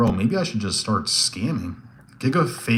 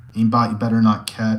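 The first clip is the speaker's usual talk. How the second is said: normal talking voice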